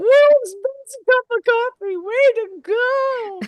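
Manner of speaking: gleeful, very high, loud, slow cheer.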